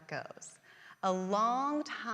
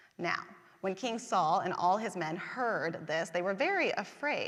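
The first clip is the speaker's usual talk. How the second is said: ordinary delivery, nothing marked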